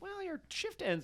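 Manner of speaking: mock very high, eager, upbeat positive tone. Retelling Jules chatting with a tired store worker: imitating Jules trying to be positive. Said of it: "This is Jules trying to be, like, positive".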